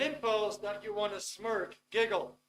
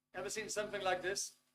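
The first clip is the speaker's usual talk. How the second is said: ordinary talk, nothing marked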